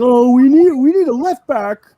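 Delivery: shrill, loud cartoonish voice. A speaker mocking entitled fans who demand a left back, in a Kermit the Frog voice. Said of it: "Was that a Kermit the Frog impression just now?".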